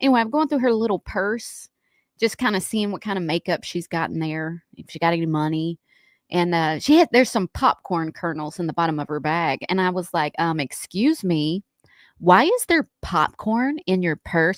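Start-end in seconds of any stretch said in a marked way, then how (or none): 10.6-14.6 put-on sassy attitude, spoken slowly. Recalling finding popcorn in her purse, the speaker quotes their past self: putting on a sassy tone. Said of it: "I was trying to be sassy like".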